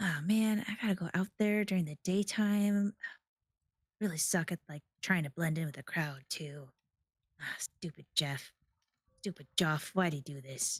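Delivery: muttered complaining grumbling under the breath. Voicing a character overheard grumbling in a hallway: NPC grumbling to himself. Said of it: "you hear a voice going like".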